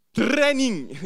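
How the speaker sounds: put-on loud exclamation in a Scottish accent.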